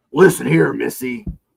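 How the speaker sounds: put-on rough, wrestler-style yell. Retelling a trooper scolding a girl, imitating a wrestler-style yell. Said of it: "yells at her like he's like, like in W W E".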